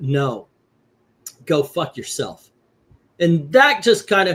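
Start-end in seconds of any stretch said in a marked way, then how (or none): 0.0-2.5 acted flat, curt, dismissive tone. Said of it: "But he went".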